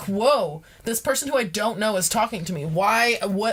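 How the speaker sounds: ordinary delivery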